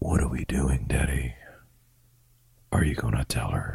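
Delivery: put-on girl's voice, very low, soft, hushed and creepy. Imitating a girl from a movie whose voice turns very low: imitating a girl's very low voice. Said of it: "her voice went from, like, a very high chipper to a very low".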